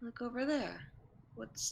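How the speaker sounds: speaking quietly. Voicing a character trying to get two others' attention: saying quietly. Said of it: "says quietly".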